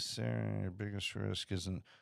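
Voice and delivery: sudden, secretive, hushed, soft stage half-whisper. Speaking to sarah while sketching out an investment plan, half-whispering. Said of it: "I'm whispering. Why am I whispering?".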